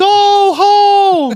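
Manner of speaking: very high, angry, loud yelled shout. Retelling an old friend's catchphrase when he got angry: imitating a friend's angry shout. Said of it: "if he would get angry".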